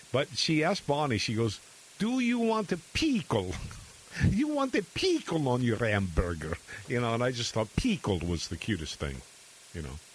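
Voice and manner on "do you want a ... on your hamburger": put-on sing-song Russian accent, pitched up. Retelling a young girl asking Bonnie about a pickle, Russian accent. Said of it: "that Russian accent".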